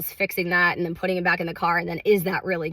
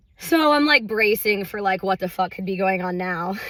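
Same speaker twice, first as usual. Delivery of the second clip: ordinary delivery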